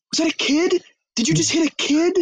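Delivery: loud, emotional cry, very high-pitched. Retelling a movie scene after a car hits something: imitating Jonah Hill loud and emotional. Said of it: "loudly and, like, very emotionally".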